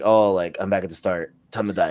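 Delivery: ordinary talk, nothing marked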